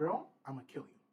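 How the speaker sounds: dead-serious, straight, threatening delivery. Retelling threatening a smug guy in the barracks: retelling a dead-serious threat. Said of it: "there's no jokes, no smiling".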